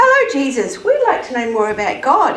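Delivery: ordinary delivery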